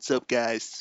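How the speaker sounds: put-on boring, dull delivery. Poking fun at co-host Joe's show intro, boring Joe impression. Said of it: "Joe always gives the most boring introduction ever. / That was a great impression of Joe".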